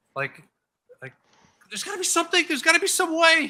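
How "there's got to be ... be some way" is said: very shrill, very loud, frantic, desperate panic. Voicing a character frantically trying to fix Atlas: desperate panic. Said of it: "Just desperately panicking".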